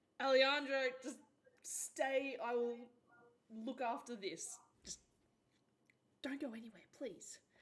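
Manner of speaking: high, loud, torn, broken-up, halting pleading tone. Voicing a character torn over leaving a friend: torn, pleading in character. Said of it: "Geode's very torn".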